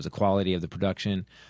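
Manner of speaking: ordinary talk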